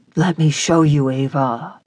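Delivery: whispering. A man speaks to Ava a hair's breadth from her lips, whispered. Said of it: "he whispered".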